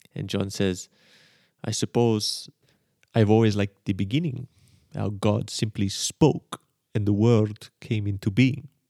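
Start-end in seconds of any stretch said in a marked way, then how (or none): 1.6-8.6 put-on Israeli accent. Act out John answering the man who called him in for a talk, in an Israeli accent. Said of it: "that's my Israeli accent".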